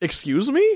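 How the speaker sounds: tough-guy voice, very high-pitched. Retelling a scene from the show, Peter's reply: good impression of Peter. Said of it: "That was a really good impression".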